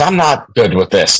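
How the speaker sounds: ordinary delivery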